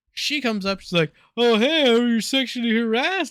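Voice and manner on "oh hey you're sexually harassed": put-on goofy manner, higher and louder. Retelling what the manager said on arrival: imitating a goofy manner. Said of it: "She's all goofy".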